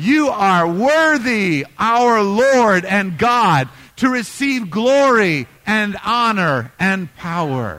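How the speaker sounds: enthusiastic, wholehearted, loud, full-gusto delivery. Leading a group that isn't giving enough, showing how it's done: with gusto. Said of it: "I'm needing some gusto".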